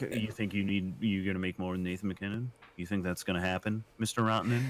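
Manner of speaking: ordinary talk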